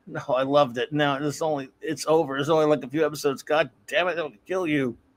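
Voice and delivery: ordinary talk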